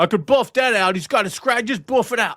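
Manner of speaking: put-on poor New York accent. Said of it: "my horrible impersonation of that accent".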